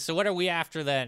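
loud, quick, rough, raspy character voice. Recapping a show and quoting a character's line, raspy voice. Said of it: "it's kind of raspy".

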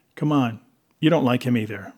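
ordinary delivery

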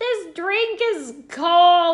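loud, high, very slow, drawn-out whine. Retelling a date's complaints at a bar: imitating London Tom whining. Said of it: "But he was super whiny".

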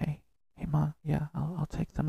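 scared, high, very hushed half-whisper. Retelling speaking to mom after a frightening day: imitating own past half-whisper. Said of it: "talking like this".

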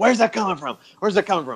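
put-on frantic, crazed-sounding voice. Retelling a wrestler searching for a hidden taunter: imitating someone going crazy. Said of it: "starts going crazy".

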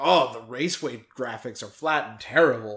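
normal talking voice

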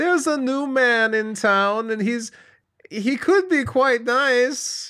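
bad, goofy, very high, loud New Zealand accent. Imagining the Kiwis reacting to Jason's arrival, doing a doofy Taika Waititi impression. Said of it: "What's that accent?".

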